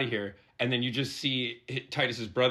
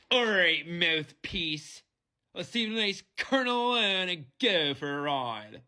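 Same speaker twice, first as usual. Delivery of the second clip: put-on heavy Philadelphia accent, pitched up; 6 semitones higher than usual. Recalling the crew member feeding lines on set, in his thick Philly accent. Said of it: "He had this thick like Philly accent, so he's like".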